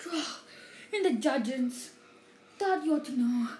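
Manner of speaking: terrified, alarmed, gasping voice. Narrator reads a professor slumping at the head table as he speaks, gasping. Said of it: "and gasped".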